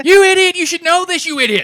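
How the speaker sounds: very high, very loud, shrill, angry screaming. Imagining listeners screaming at them: imitating people screaming. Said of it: "just screaming at me".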